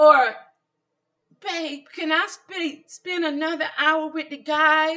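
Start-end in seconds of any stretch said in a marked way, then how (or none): 1.4-5.0 put-on high, slow, childish baby voice, guys drawn out. Imagining him asking for a favor: baby voice. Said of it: "That type of baby voice?".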